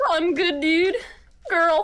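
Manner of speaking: put-on high, laid-back, loose, lazy, easygoing stoner voice. Talking with others about stoner voices, a speaker slips into a Shaggy voice. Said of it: "Doing a Shaggy voice with a girl instead of dude".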